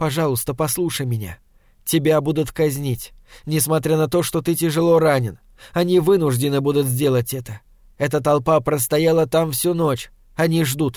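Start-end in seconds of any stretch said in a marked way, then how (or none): none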